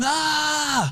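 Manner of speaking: high-pitched screaming. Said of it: "[name] screaming".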